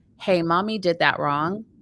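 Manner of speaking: normal talking voice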